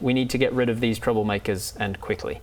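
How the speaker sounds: ordinary delivery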